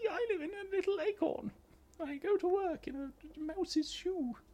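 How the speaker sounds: very high, very slow, drawn-out squeaky put-on voice. Doing a quick Dave Bulmer voice after a sudden request. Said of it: "do your best Dave Bulmer voice".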